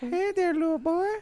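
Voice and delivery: very high, creepy cartoon old-man voice. Friends joking about a creepy Family Guy character, Family Guy old-man impression. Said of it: "sound like that old pedophile on Family Guy".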